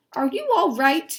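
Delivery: voice lifts up on right. Reading a story aloud and explaining punctuation, rising tone on right. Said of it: "He's asking a question, and that's why my voice went up".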